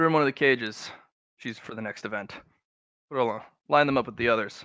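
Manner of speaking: commanding, authoritative voice. Voicing the eldest brother giving orders to soldiers: in character as the heir. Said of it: "the heir".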